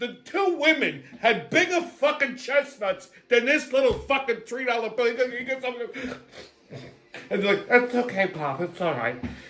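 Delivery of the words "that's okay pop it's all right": demanding, entitled woman voice.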